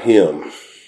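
leaning hard on the word him. Speaker retells the cry to crucify Christ, stress on "him". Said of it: "The emphasis on the word "him."".

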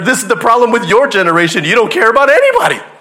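loud angry shout. Recounting an argument between two strangers, imitate the other one angrily yelling back. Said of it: "these two people are yelling at each other".

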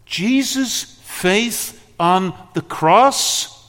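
impassioned preaching building to a high, loud crescendo.

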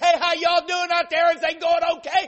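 very loud high hollering. A dishwasher retells calling out to the cooks from the back, yelling. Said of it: "I'm yelling out there to the cooks".

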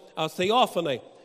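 plain reading voice

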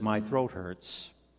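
soft, hushed, barely voiced whisper. Retelling what a patient said just after the ventilator came off: imitating a whisper. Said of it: "Whispered it".

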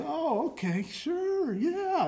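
polite phone voice, very high and very slow. Retelling the speaker's wife answering the pastor's call, imitating her phone voice. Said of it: "my wife has this tremendous ability for a phone voice".

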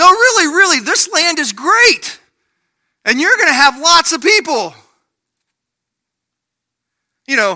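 pushy, car-lot used car salesman sales patter. Speaker portrays god making a promise, like a used car salesman. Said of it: "God is sounding like a used car salesman".

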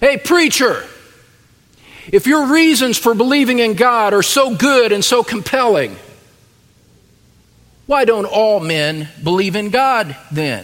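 play-acted, mocking, jeering heckle. A preacher imagines an author calling out from the back, retelling a mocking heckle. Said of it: "mockingly call out from the back of the room".

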